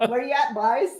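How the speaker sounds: high-pitched Canadian Newfoundland accent. Trying out regional accents on the channel, newfoundland accent. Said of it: "Canadian Newfoundland accent".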